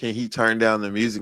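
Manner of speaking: ordinary talk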